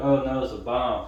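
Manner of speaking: normal talking voice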